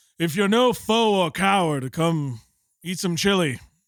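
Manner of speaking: loud shouting, high-pitched. Game master, as Omar, calls out before turning back into the bar: Omar yelling down the street. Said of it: "He yells down the street".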